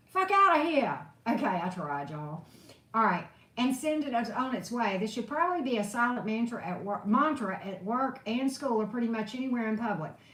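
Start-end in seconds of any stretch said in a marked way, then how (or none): 0.2-1.0 loud put-on New Jersey accent. Reading a mantra aloud, trying to say it in a New Jersey accent. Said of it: "Say it in a New Jersey accent".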